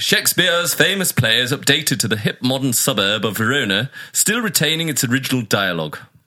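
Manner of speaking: grand, theatrical Shakespearean stage-actor diction. Reading out a film synopsis as asked, like a Shakespearean actor. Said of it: "read out like a Shakespearean actor".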